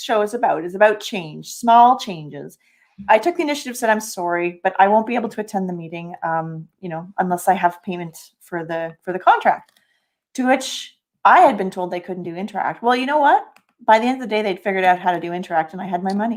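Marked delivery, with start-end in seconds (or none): none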